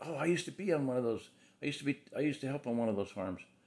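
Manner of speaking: eager, excited, high-pitched gushing outburst. Retelling what a customer who called in said: imitating someone excited. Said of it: "she just very excitedly said".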